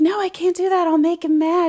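light, breathy, high voice. Retelling a film scene, quoting Audrey: imitating Audrey's lighthearted breathy voice. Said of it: "she says it in such a lighthearted, breathy way".

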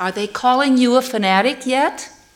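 very loud, high-pitched, room-filling voice. Retelling a man at a podium leaning toward the people: real loud voice. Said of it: "said in a real loud voice".

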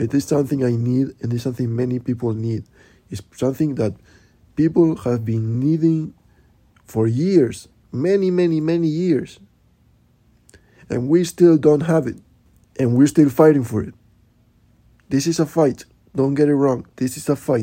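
fired-up, heated, passionate, impassioned delivery. Closing a podcast by urging listeners to keep fighting: heated. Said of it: "very difficult for me to talk about this issue without getting heated".

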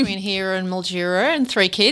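plain

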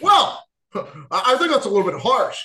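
put-on plain American accent with American vowels. Retelling a scene where Kraven responds: Kraven's American accent. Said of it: "that is not just me being funny. That is how he speaks compared to Russell Crowe. He has an American accent".

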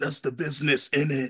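raspy voice, words rasped out. Retelling a reality show clip, imitating a footballer: Riyad Mahrez raspy voice. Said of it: "he got that raspy voice".

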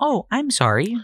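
mock forced polite smile. Retelling answering a customer while hiding rage: imitating forced polite smile. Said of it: "I put on a smile".

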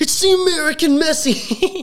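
mock fan yell, very high and very slow, drawn out. Retelling hardcore fans behind them at the game: imitating loud fans yelling. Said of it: "really loud".

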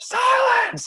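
very high, full-force screaming yell. Casting thaumaturgy to yell for silence at three times normal screaming: yelling as loud as possible. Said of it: "I'm going to yell silent as loud as I can".

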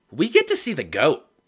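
excited and loud, pitched high.

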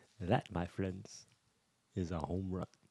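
hushed, low play-by-play narration. Imagining a celebrity calling a baseball game, the speaker does a Morgan Freeman impression. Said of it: "Imagine Morgan Freeman calling a baseball game".

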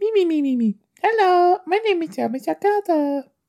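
tiny, very high, cutesy bunny voice. Mocking the star as a little bunny: Sarah Michelle Gellar impression. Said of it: "She's just like".

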